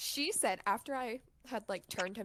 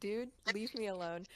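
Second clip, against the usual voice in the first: ordinary delivery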